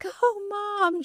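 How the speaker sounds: very high, thrilled, excited shrieking cheer. Mother retelling her daughter cheering as she walked on stage, retelling a scream. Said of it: "She's like screaming".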